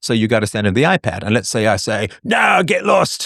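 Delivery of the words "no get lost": put-on sudden, pitched-up Cockney accent. Imagining refusing a company's demand in a deal: Cockney accent. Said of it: "I suddenly have a Cockney accent".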